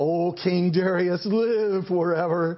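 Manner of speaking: slow, loud, fawning, flattering voice.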